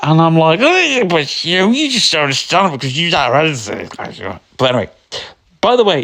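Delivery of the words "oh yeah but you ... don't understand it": mock drunken slurring, higher pitch. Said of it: "that's my voice when I'm absolutely pissed".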